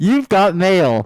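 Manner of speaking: booming, very loud computer alert announcer voice. Saying the line on request, imitating the "You've got mail" alert. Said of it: "That sounded exactly like it".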